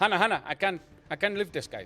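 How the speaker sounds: put-on Indian accent. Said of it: "he sounds like a Hindi Dexter".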